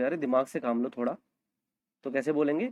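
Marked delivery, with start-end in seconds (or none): none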